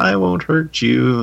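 cutesy little voice, high-pitched, slow, drawn out. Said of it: "she's got like this cute little voice".

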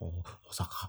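put-on Japanese accent. Teasing the other speaker by repeating his word in a mock japanese accent. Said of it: "you went".

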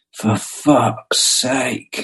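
quiet muttered remark. Retelling what he said to the friend assisting him on a photo job: muttered under breath. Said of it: "very quietly under my breath in the corner".

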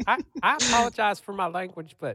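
shrill voice pushed way up and loud. Quoting a coach's apology at a press conference: Mack Brown impression. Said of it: "Ryan Nanni finds the best octave".

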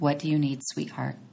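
tender, soothing tone. Showing a question to ask yourself when hurt: soothing voice, like to a small child. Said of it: "just like you're talking to a cute four-year-old".

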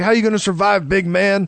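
ordinary talk

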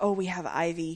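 put-on, slow Eastern European accent. Recounting a scene where a guy calls, in an eastern european accent. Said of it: "he's got this Eastern European accent".

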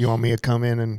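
put-on heavy overdone southern country twang. Speaker acting out a family member's words, overdone Southern country twang. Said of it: "that was a little too much twang".

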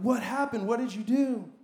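acted exasperated, upset, frustrated and demanding tone. Retelling a question to a child who knocked his sister over: retelling own frustrated question. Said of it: "I look at Emerson frustrated".

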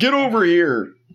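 mock held-back villain yell. Retelling the moment Scorpix yells: imitating Scorpix yelling. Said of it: "the moment that Scorpix yells".

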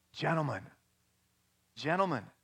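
deeply moved, breathy half-whisper full of pathos. Retelling the conductor addressing his orchestra after an ovation, half-whispering with pathos. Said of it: "he whispered with great Pathos".

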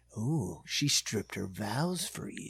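sexy purr, very low and hushed. Retelling Dan's line about the nun, mock-sexy Dan voice. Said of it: "in his sexy voice is like".

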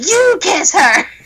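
mock shrill, very high shrieking yell. Telling how a woman in a theater yelled at her dad: imitating a woman yelling. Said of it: "some woman yelled at my dad".

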